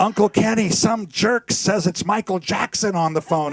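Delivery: high, loud, screamed call-out. Retelling how a thirteen-year-old goddaughter answered the phone: imitating a scream. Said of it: "she screamed across the house".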